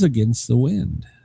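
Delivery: normal talking voice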